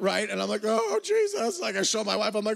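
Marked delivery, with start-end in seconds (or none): 0.6-1.6 mock very high ugly-crying outburst, sobbing. Retelling seeing a ten-thousand-dollar donation notification: retelling ugly crying. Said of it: "I immediately start ugly face crying".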